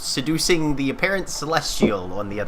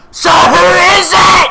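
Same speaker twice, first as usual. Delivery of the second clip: gruff, rough, booming dwarf roar, very high and loud; 17 dB louder than usual. Narrating a scene, voicing a lone dwarf in the hushed crowd, roaring dwarven voice. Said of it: "a lone dwarven voice ro- ro- roars out".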